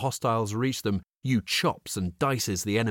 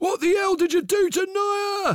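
very high, loud pained exclamation; 6 dB louder than usual. A man seized by a large snake shouts at the creature: exclaiming in pain. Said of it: "In pain, he exclaims".

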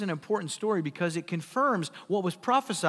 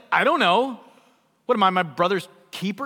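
mock bratty, insolent, loud back-talk tone; 8 dB louder than usual. Retelling the preacher's version of Cain answering God: imitating insolent Cain. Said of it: "He's just insolent".

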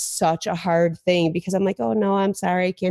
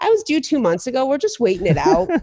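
put-on very sarcastic tone, high and swooping; 6 semitones higher, 3 dB louder than usual. Retelling own reply when asked about a due date, really sarcastic. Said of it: "Some days I was really sarcastic".

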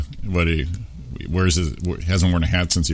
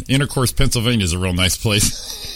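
ordinary delivery

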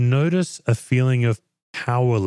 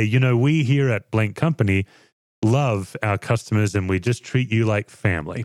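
ordinary talk

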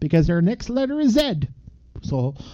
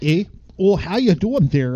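put-on Canadian accent, faster pace; 2 semitones lower than usual. Joking about accents, a speaker breaks into a Canadian accent. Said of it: "I'll do the Canadian there".

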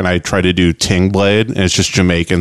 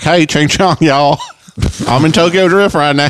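put-on Southern-accented child voice, higher pitch; 8 semitones higher than usual. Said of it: "always talks like this in movies".

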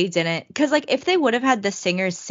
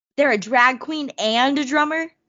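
acted, high, bewildered, can't-believe-it tone; 7 semitones higher than usual. Imagining a movie reviewer's reaction to Angel in Rent, imitating someone baffled. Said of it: "He'd be so baffled".

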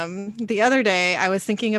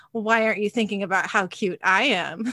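put-on snotty little-kid voice. Mother retells her son's reply when he asked why she was smiling, snotty Killian impression. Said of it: "he all snottily goes".

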